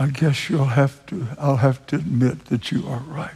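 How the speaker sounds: put-on very hushed voice. Retelling how a man he challenged answered him, retelling a very hushed reply. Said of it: "with a very hushed voice".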